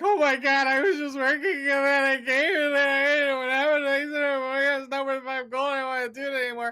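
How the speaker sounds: panicked and frantic, very high-pitched and very loud. Voicing a prisoner who starts to freak out: prisoner freaking out. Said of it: "start to freak out".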